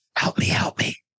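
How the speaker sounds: hushed, soft whisper right at the ear. Telling a story where a voice whispers in the listener's ear, Alice whispering. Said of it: "you hear a voice whisper in your ear".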